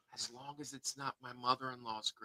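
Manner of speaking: quiet low whisper. Adding an aside to co-hosts during a live show: whisper. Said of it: "I have to whisper this".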